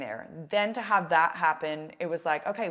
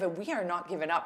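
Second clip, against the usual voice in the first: put-on encouraging, upbeat voice. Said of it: "You gave him a pep talk".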